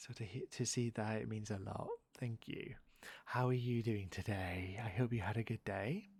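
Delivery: soft speaking. Thanking someone and asking how their day went: soft speaking. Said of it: "even when I'm soft speaking like this".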